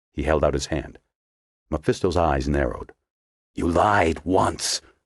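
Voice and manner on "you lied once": words hissed sharply through the teeth, sibilant. A narrator reads Mephisto answering Pendergast, hissing. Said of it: "he hissed".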